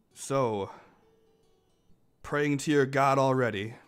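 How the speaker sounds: loud booming jackal voice. Voicing a jackal calling to a meditating monk: booming jackal voice. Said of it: "booms out".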